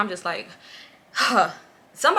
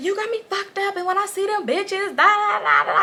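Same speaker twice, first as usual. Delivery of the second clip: acted-out, very high-pitched, furious angry rant; 11 semitones higher than usual. Retelling what she said on the phone: imitating someone angrily going off. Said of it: "She going off".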